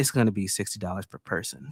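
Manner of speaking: very low, hushed whisper. Retelling what a woman leaned over and said in the speaker's ear: imitating a whisper. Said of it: "Why she why she do it in a whisper though?".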